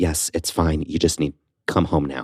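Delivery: put-on urgent, dire voice. Retelling being told to come home right away, imitating an urgent, dire tone. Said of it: "it sounds very urgent, very dire".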